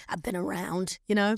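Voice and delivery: put-on rough, gruff voice. Retelling a line from a man playing an older prostitute, in a gruff voice. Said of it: "he had like a really gruff voice".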